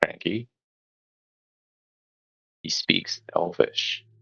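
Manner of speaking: speaking low. Pointing at the bear during the game, the speaker says its name in a low voice. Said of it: "I just say in a low voice".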